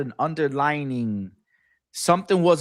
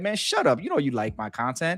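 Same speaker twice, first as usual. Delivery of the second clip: put-on sarcastic tone. Retelling own replies to online haters: retelling own sarcastic reply. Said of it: "but I be sarcastic".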